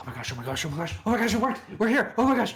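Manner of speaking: giddy, swooping, frantic, high, overexcited, rising gushing. A player's character arrives in a clearing near an ogre, overexcited. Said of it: "Calm down".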